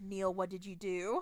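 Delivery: put-on muttering under the breath. Retelling a tense scene where Peter watches the painting: imitating Peter muttering under his breath. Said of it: "He even mutters under his breath".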